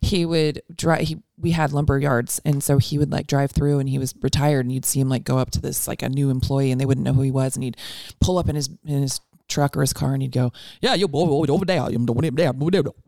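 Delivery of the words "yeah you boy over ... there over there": put-on Cajun-sounding accent. Retelling what a retired relative said to new employees: imitating a Cajun-sounding accent. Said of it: "he almost sounded Cajun".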